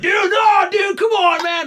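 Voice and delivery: mock drunk holler, very high, slow, drawn out. Retelling how a partygoer begged him to stay: imitating a drunk guy. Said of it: "the drunk guy's like".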